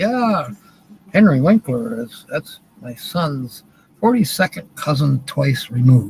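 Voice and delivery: ordinary talk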